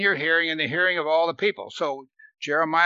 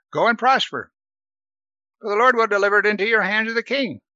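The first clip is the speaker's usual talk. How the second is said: heavy, high, biting, falsely encouraging sarcasm; 5 semitones higher, 3 dB louder than usual. Retelling a man's answer to the king who asked about war: mock-sarcastic reply. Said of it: "it must have been so sarcastic".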